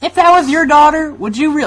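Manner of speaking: very high, loud put-on southern accent. Quoting their mom, who has a southern accent: imitating mom's southern accent. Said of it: "my mom has a southern accent".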